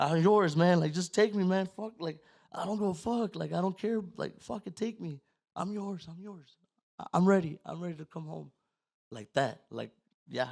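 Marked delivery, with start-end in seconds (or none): 0.0-8.5 put-on ugly crying, high scream through sobs. Retelling a breakdown while driving: imitating screaming while bawling. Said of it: "ugly crying, like, bawling, and I'm screaming this shit".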